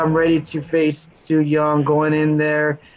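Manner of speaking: put-on flat, monotone, unenthusiastic cue-card read. Mocking her promo that sounds like reading a cue card, imitating a promo with no enthusiasm. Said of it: "there's no enthusiasm. There's nothing behind her promo. She's just like, it's like reading, a, she's like reading a cue card".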